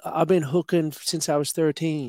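high put-on female voice. Quoting what a woman in the film called herself: more female voice. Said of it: "In a more female voice".

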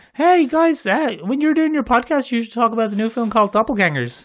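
very high cracked voice. Quoting a friend's lady friend suggesting a podcast topic: horrible impression of lady friend. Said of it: "That is just a horrible impression".

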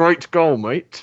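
forced, through gritted teeth. Describing a player congratulating a goalscorer: retelling through gritted teeth. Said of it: "through gritted teeth".

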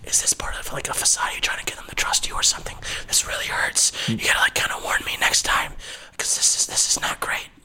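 hushed, whispering voice. Voicing a hurt grunt who whispers to the attacking player: whispering. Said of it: "he kinda whispers at you".

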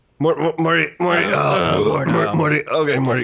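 put-on stammering cartoon scientist voice. Showing how Rick sounds, doing a Rick impression. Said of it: "how does Rick sound?".

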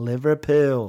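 American-sounding accent. Saying the city name aloud as a test: American-sounding accent. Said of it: "That was American".

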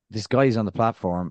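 plain

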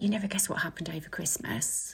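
whispered. Retelling words he whispered in the speaker's ear: imitating a whisper. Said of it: "he whispered in my ear".

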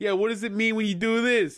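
fake, put-on Italian accent. Retelling a movie conversation between two characters, imitating an Italian accent. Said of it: "like, Italian accent".

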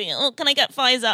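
put-on entitled, demanding manner. Retelling asking for a different vaccine: imitating own Karen-like demand. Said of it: "I sounded like a Karen asking to see".

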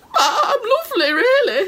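put-on sad, lonely character voice. Phoning the vegetable crisis line as a Brussels sprout: acting as a lonely Brussels sprout. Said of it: "putting on a hat to make herself look like a Brussels sprout".

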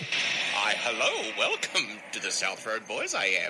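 awful, bad impersonation of a creature voice. Opening a podcast episode in a bad Yoda impersonation. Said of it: "my shit Yoda impersonation".

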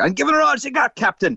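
screaming, pitched very high. Imitating a busy takeaway worker as Scotty from Star Trek: screaming Scotty voice. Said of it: "he's screaming at the deep fried fire".

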